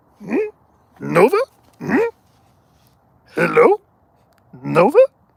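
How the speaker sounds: crude, high character voice with pitch swooping about. Showing what happens when you do a Yoda impersonation: Yoda impersonation. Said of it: "if you do a Yoda impersonation".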